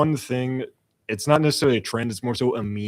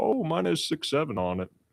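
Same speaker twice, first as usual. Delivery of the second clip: fifty-something man, raised pitch; 6 semitones higher, 3 dB quieter than usual. Retelling an older man reading his golf ball: imitating a man in his fifties. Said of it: "he looked at his ball and went".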